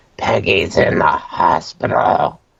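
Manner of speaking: strange, rasping, creaky voice as over a phone. Retelling a phone call from a deceased man's number: imitating a weird voice. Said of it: "this weird voice going like".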